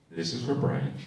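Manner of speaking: close, low, soft, hushed half-whisper. Telling an audience member what to half-whisper to his partner: half-whispering. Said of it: "look right at her and whisper".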